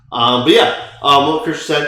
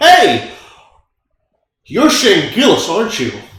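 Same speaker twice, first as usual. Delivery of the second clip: put-on brash, unabashed, bold, high-pitched voice; 6 semitones higher, 4 dB louder than usual. Retelling a grown man approaching in line: imitating a man speaking boldly. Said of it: "he says with complete boldness".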